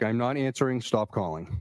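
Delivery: normal talking voice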